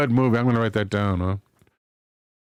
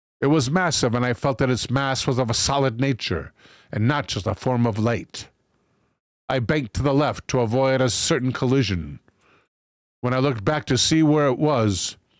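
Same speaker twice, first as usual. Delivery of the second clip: usual speaking voice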